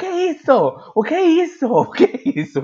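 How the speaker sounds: very high, shrill, swooping shout. Recounting the professor's reaction to an open microphone, retelling professor's shouting. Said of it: "E o professor gritando".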